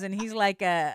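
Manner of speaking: ordinary talk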